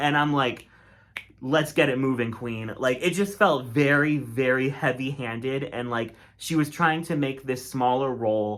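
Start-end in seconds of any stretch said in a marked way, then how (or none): none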